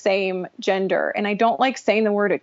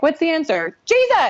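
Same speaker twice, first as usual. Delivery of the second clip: put-on high, eager child shout; 7 semitones higher, 3 dB louder than usual. Talking about her ministry, acting out a mock Sunday school Jesus yell. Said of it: "really good like, Sunday school Jesus yell".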